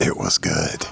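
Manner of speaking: whispering. Asked what they thought of the food, answering in a whisper. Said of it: "Why are you whispering?".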